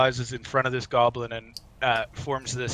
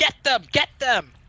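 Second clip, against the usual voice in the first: very high, shrill, shrieking yell; 12 semitones higher, 4 dB louder than usual. Voicing Yimik goading the other goblins on: Yimik yelling. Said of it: "yelling at them".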